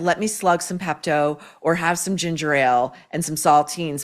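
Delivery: ordinary delivery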